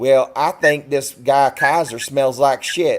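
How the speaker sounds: put-on broad, thick rural country accent, laid on heavily. Retell what a Navy SEAL's very sweet wife told you, in Diane's really thick country accent. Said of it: "She has a really thick country accent".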